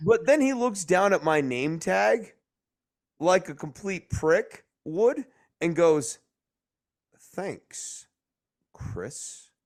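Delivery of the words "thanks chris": play-acted, limp, lifeless dead-fish voice, near whisper. Retelling how a man read the speaker's name tag: imitating a dead fish voice. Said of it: "with this, like, dead fish voice".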